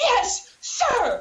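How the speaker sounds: play-acted very high, super loud blurt. Retelling replying to a man at the door who demanded a mask, super loud. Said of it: "but like super loud".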